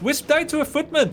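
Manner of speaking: put-on high-pitched Indian accent. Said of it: "I'm talking with an Indian accent".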